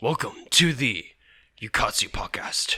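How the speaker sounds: podcast-style announcer voice. Asked to use his new announcer voice for closing thoughts: announcer voice. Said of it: "use your new announcer voice".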